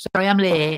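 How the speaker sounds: put-on heavy, broad Manchester accent. Retelling a woman barging in late, in a thick manchester accent. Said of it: "thick Manchester accent".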